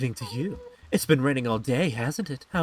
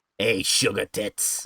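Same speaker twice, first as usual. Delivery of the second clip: raspy voice of a lifelong smoker; 4 semitones lower than usual. Showing how a phrase should be said, in a smoker voice like Marge Simpson's sisters. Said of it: "You gotta say it like like a like a smoker".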